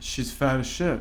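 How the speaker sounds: usual speaking voice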